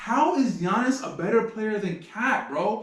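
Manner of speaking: restrained, mild shout. Recalling a TV debate, the speaker reenacts their own reaction: retelling own screaming at TV. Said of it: "And I'm screaming at the T V".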